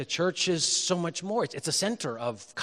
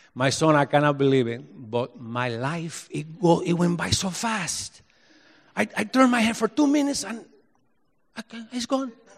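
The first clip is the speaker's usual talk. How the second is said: put-on Spanish accent, much higher pitch and slower pace; 4 semitones higher, 4 dB louder than usual. Retell what a 91-year-old man born in Havana told you, in a put-on Spanish accent. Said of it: "he would say in his Spanish accent".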